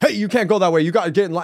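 high, commanding yell. Retelling how a man at customs stopped him in line, imitating him yelling. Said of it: "So he's screaming at me".

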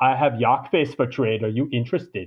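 put-on thick, heavy Austrian accent. Retelling a man who walked up to the speaker's booth offering a trade, Schwarzenegger-like thick Austrian accent. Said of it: "he sounds like Arnold Schwarzenegger with this thick German accent or Austrian accent".

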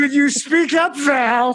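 put-on yelling. Retelling a heckler in the audience, imitating a heckler yelling. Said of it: "classic pieces of garbage just yelling".

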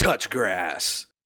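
brooding, edgy cartoon voice. Talking about a game, the speaker voices its taunt in a Shadow the Hedgehog voice. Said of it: "Shadow the Hedgehog voice".

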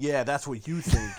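loud, sharp, jabbing, combative delivery. Imagining Chris Christie as he was in the debates: imitating Chris Christie's debate manner. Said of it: "his personality during the debates was just like".

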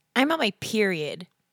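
put-on talking like a girl. Retelling someone's last bit, an impression of a girl. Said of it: "I do an impression of a girl".

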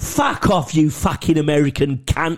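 put-on London Cockney accent. Retelling a cockney's reply to an American, in a cockney accent. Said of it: "And the cockney went".

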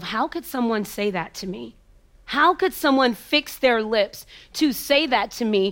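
plain

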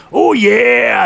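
mascot character voice. Imagining someone smashing into a room: Kool-Aid Man voice. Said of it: "going like the Kool-Aid Man".

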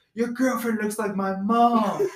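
loud, high-pitched hollered yelling. Retelling a guy yelling at the Houston players from the tunnel, retelling a yell. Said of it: "he's yelling at the Houston players".

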